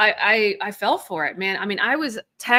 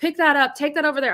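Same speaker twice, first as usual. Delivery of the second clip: mock high-pitched, rushed, barking yelling; 6 semitones higher than usual. A parent recalling how they yelled at their little kids, retelling screaming at kids. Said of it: "I'm like screaming at my kids".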